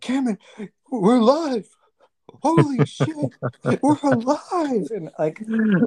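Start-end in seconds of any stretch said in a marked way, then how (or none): 0.0-4.9 mock freaking out, very high and stretched out. Retelling a near-miss car crash, imitating Suarez freaking out. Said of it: "freaking out".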